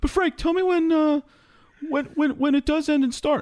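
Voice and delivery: very high-pitched, pestering voice. Retelling how the show's editor asks when shows start and end: imitating his high voice. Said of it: "He has this high voice when he talks to me".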